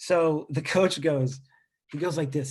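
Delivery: ordinary talk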